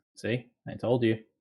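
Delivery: ordinary talk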